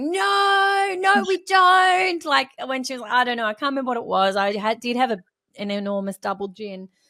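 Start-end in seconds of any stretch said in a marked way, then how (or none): 0.0-2.2 very slow, loud, protesting yell, "no" drawn out long. Retelling yelling back at a woman who had said something, retelling a yell. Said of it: "I yelled something like".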